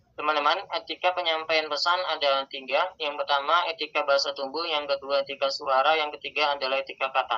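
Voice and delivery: indistinct, unclear mumble, mouth barely open. Showing how he spoke unclearly early in college: mumbled, unclear. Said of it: "saya ngomongnya nggak jelas. Saya tuh ngomongnya misalnya seperti ini".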